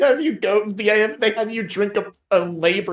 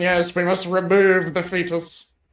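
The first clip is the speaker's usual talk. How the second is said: put-on elderly graybeard wizard voice. Describing a wizard doctor character and voicing him; old graybeard wizard voice. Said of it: "acts like a oldie fucking graybeard".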